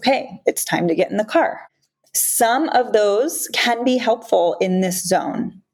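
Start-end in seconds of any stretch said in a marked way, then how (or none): 0.0-1.6 put-on firm, assertive, no-nonsense, animated voice. Demonstrating what they tried saying to get him in the car, assertive voice. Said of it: "I tried using an assertive voice".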